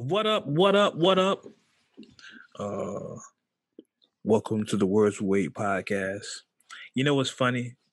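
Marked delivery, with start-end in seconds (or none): 2.6-6.3 deep, slow host voice dropped a full octave. Opening a podcast episode with a greeting: voice dropped an octave. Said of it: "Did you just drop your voice a octave?".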